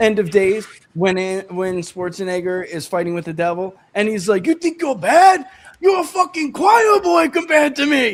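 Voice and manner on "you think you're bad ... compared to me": very high-pitched, loud, raised yell. Act out Schwarzenegger fighting with the devil in End of Days, imitating Schwarzenegger yelling. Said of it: "And he's yelling at the devil".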